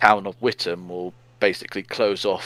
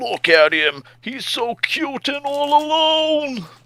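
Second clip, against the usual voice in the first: very high, drawn-out cartoon voice; 4 dB louder than usual. Retelling what a robot said to them, in Pumbaa voice from The Lion King. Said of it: "a Pumbaa's voice from The Lion King".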